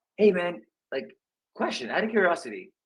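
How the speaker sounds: genuinely inquiring voice. Demonstrating how to ask a question out of curiosity, truly curious tone. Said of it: "Truly sound curious. Like".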